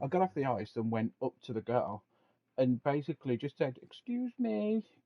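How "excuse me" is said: put-on very high, young, childlike little voice. Retelling going up to a girl after getting off the ice, in a young high-pitched voice. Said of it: "really young, obviously, high pitched voice".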